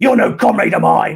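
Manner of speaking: spat-out shout. Retelling how a man shouted at the speaker before going through a door: retelling a spat-out shout. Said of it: "he shouts out, spitting out".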